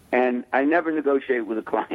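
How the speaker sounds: normal talking voice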